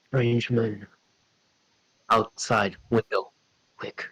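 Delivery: put-on wolf creature voice. Storyteller gives the direwolf's warning to Ocean, in direwolf voice. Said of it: "you suddenly hear a voice from the direwolf".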